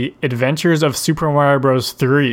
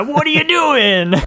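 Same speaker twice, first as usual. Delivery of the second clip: very high, gruff exaggerated Italian voice; 13 semitones higher than usual. Describing the voices in a Mario show episode: imitating gruff stereotypical Italian Mario voice.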